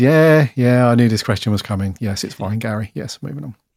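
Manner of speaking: mock sarcastic, dismissive brush-off tone. Imitating a developer's reply after being asked how things are going: imitating Pierre's sarcastic tone. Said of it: "You sound so sarcastic".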